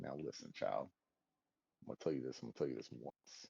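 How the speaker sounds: very quiet, hushed, tough gangster-style voice. Mocking a game commander by acting him out: gangster Zavala voice. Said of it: "Zavali's gangster as shit".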